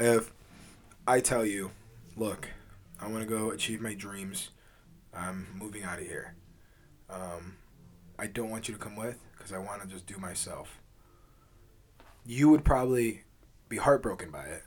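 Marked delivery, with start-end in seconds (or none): 2.2-10.7 hushed, very quiet, earnest and grave. Giving the listener a hypothetical example: earnest, serious delivery. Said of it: "You said that so seriously".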